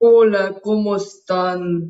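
silly, round, deep, loud tomato character voice. Asked to greet everyone in his invented tomato character's voice, tomato voice speaking very low. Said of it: "salúdanos con voz de tomate".

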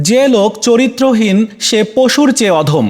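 ordinary talk, nothing marked

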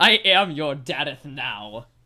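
mock old-timey proclaiming voice, loud and slow.

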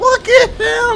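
very high, loud astonished shout.

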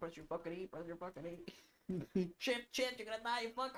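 high-pitched screaming. Retelling how he screamed to himself watching a player's video, re-enacting his screaming. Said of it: "I'm screaming to myself".

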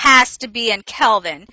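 stern, loud, slow, angry scolding mother voice. Teacher acting out what she tells her class, in her put-on angry mom voice. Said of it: "I use my angry mom voice".

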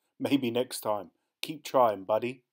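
ordinary delivery

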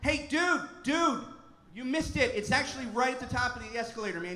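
yelled, called out across a distance. Someone going up the escalator answers a man asking for Quiznos, retelling a yell. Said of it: "someone going up yelled back at him".

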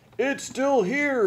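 shrill, very high cry of fury. Mr. Frizzle comes down, filled with fury, crying out in fury. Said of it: "he cried".

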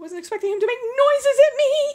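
frightened, spooked outburst, high and rising. After someone in the bedroom made noises at them, scared. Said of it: "I'm scared".

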